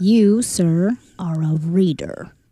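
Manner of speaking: mock disgusted tone. Quoting a boss calling an employee a reader: imitating disgust. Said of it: "The disgust is evident".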